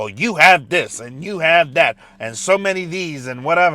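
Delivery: patronizing, condescending, dismissive talking-down tone. A speaker who lost a job mimics a letter's wording, mock-condescending. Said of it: "it was so condescending".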